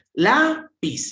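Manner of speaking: lápiz with stress on first syllable lá. Explaining Spanish word stress, stress on first syllable of lápiz. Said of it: "le coloco la mayor fuerza de voz en la primera y digo".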